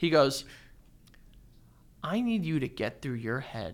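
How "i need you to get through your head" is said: mock-deadpan, straight-faced and quieter. Retelling what a man told him with a straight face, imitating a deadpan delivery. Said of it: "He looks at me straight face without any hesitation".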